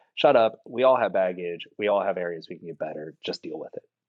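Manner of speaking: ordinary delivery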